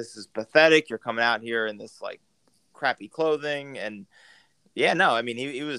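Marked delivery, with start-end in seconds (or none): none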